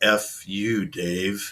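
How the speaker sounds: soft, hushed, machine-like computer voice. Quoting a line to describe an earlier moment: perfect HAL voice. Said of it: "That's like the perfect Hal voice right there".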